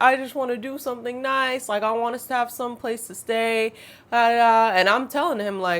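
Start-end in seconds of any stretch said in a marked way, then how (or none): 0.0-3.7 mock crying, high, tearful, with yelling. Speaker retells what a man said during an argument over a boundary: imitating a man crying and yelling. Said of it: "he's yelling, he's crying, he's like".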